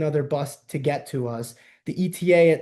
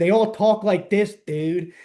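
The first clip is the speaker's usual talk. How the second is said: strong Philly accent, much higher; 4 semitones higher than usual. Explaining how people in Philadelphia really talk, in a hardcore Philly accent. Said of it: "nobody in Philadelphia who talks like this".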